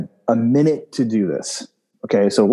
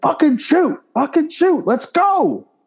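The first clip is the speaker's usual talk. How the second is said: play-acted screaming, very high-pitched. Retelling a match where a shooting partner, Chris, hurried him: imitating someone screaming. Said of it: "He's screaming at me".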